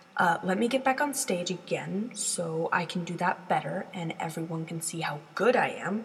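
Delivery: plain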